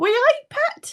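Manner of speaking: very high Newcastle accent. Showing how people from Newcastle are meant to sound, in a stereotyped Newcastle accent. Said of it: "how people from Newcastle are meant to sound".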